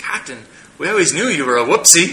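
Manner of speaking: high, loud, laughing, teasing delivery.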